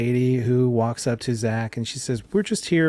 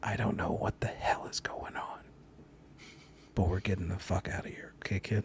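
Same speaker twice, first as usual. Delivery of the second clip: breathy, hushed whisper, close and intimate; 5 semitones lower, 14 dB quieter than usual. A woman leading a sixteen-year-old through a crowd speaks to him: whispering. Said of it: "She whispers down to you".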